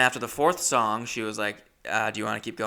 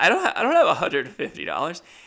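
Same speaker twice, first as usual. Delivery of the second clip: put-on, high, rushed, choked-up crying; 7 semitones higher, 5 dB louder than usual. Retelling own words to the bouncer about the money, reenacting getting choked up. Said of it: "started getting choked up".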